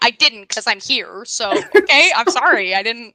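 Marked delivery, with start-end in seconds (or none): none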